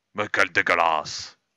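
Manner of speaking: put-on Belgian accent. Playing a game with a friend, he reacts in a put-on Belgian accent. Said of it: "pourquoi tu prends l'accent belge quand tu dis ça".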